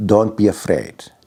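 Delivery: firm, definitive tone in simple broken English. Retelling advice from a grandmother: imitating her definitive broken English. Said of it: "in her broken English".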